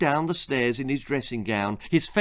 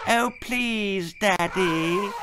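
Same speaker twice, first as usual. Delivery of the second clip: high, sugary, sickly sweet wheedling voice; 6 semitones higher than usual. A narrator reads a daughter coaxing her father, in a sugary voice. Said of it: "she said in her most sugary voice".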